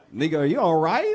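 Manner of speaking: loud bewildered tone. Retelling own reaction to a man's jealous texts: retelling own past reaction. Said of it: "I was like".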